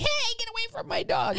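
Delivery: very high-pitched loud yell. Retelling charging at guinea fowl attacking the dog, retelling a yell. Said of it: "yelling like".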